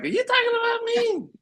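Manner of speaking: woman's voice, pitched very high. Imagining the wife watching later and asking about it: imitating the wife. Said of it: "she gonna be like".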